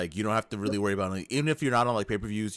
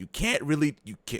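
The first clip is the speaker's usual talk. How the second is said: voice cracking and breaking high on the words; 6 semitones higher than usual. Talking about wrestling companies when the voice cracks: voice cracking. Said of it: "that voice crack".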